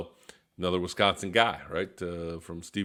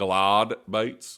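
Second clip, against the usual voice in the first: put-on Australian accent, louder; 4 dB louder than usual. Describing baits another person throws, saying it as he might, australian accent. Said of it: "as he might say, with his Australian accent".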